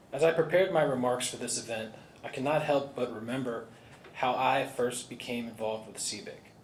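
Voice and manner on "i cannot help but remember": plain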